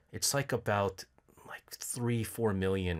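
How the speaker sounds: soft, put-on sad, sorrowful voice. Retelling messing with a loan caller: imitating own put-on sad voice. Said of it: "I sound really sad".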